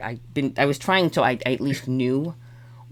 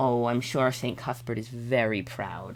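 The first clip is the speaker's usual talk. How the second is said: snide, mocking, sarcastic tone; 4 dB quieter than usual. Voicing a character who needles the other player's character: mocking tone. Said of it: "in a mocking tone".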